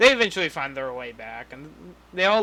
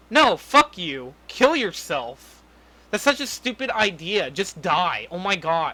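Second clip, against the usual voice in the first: put-on scornful, aggressively dismissive, slow. Retelling a cartoon scene where Rick refuses to help: aggressively dismissive Rick. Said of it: "it's so aggressively dismissive".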